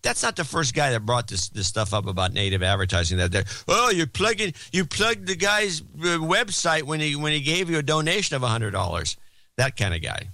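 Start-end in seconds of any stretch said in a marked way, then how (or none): 3.7-9.2 griping, complaining voice, pitched up. Imitating a listener who complains about a plugged website: imitating a complaining listener. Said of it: "that's not exactly how he sounds".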